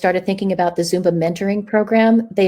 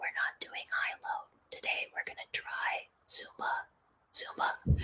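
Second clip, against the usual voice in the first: soft, hushed whisper; 19 dB quieter than usual. An instructor who lost their voice retells addressing the class, sort of whispered. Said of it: "I sort of whispered".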